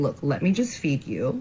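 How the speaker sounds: ordinary talk, nothing marked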